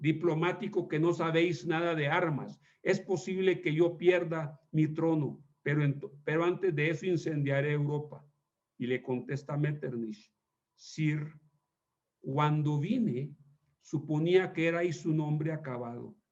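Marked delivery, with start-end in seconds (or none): none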